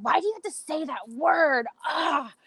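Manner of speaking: high, indignant, exasperated, angry tone. Retelling how a friend reacted to a word: imitating an angry friend. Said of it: "And she'd get so angry".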